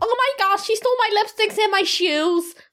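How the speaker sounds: very high-pitched put-on American accent. Asked by the other speaker to do an American accent, speaking in an American accent. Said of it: "Do your American accent".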